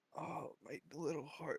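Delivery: high, soft, pained dying groan.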